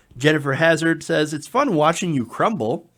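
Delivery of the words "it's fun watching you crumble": usual speaking voice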